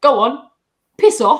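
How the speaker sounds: put-on very loud bellow in a strong British accent. Quoting a favorite scene from the show where Nick is angry: Nick's strong British accent. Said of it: "in the most British accent".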